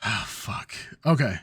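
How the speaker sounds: deflated, unexcited speech with a deep sigh. Retelling his reaction to going to see Venom, imitating a deep sigh. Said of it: "he has this like deep sigh".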